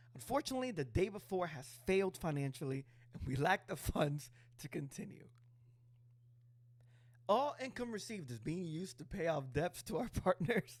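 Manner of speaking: reading through laughter, high voice. Host reading a company's tweet aloud to listeners, laughing while reading. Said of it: "I can't stop laughing".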